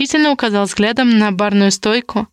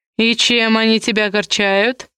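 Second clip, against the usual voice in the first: mocking, teasing tone, slower. Kamul answers Ler's remark about the Kamalovs, mockingly asking. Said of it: "насмешливо уточнил Камул".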